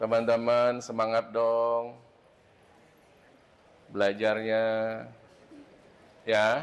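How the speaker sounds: listless drag, very low, very slow. Addressing a group about their studying, demonstrating a limp, low-energy delivery. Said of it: "Kalau saya ngomong seperti ini lemes atau semangat? Lemes".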